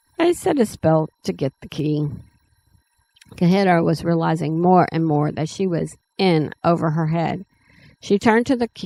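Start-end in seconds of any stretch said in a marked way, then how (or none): none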